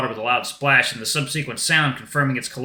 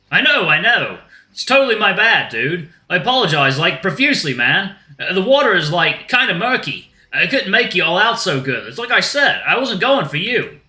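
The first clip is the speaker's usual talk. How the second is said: loud, pitched-up put-on Australian accent; 5 semitones higher, 5 dB louder than usual. In an acted scene, a character answers another: australian accent. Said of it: "Maybe an Australian accent will do".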